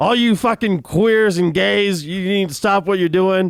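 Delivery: mock, very high, shrill, yelling rant. Recounting a scene, the speaker acts out the listener yelling at a man. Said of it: "start yelling at him like".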